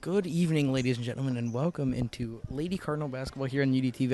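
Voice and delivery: quiet, hushed voice. Opening a basketball broadcast in a very quiet gym: speaking quietly. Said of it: "I apologize for being so quiet".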